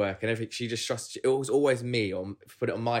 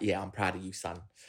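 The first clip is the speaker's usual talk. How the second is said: put-on proper South London geezer accent; 3 semitones lower, 6 dB quieter than usual. Describing a father as a bald geezer: imitating dad's South London geezer voice. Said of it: "proper there, South London".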